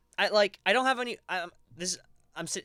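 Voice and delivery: high, stuttering, tripping over words with broken starts. Talking to viewers while sitting down, stuttering. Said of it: "sorry, I'm stuttering".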